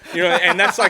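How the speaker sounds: loud laughing outburst.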